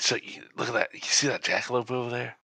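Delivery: quiet, hushed voice. In a tabletop scene, a character answers the group's questions in a hushed tone. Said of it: "In a hushed tone".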